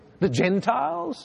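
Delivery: high, slow, drawn-out sarcastic scoff, sneering.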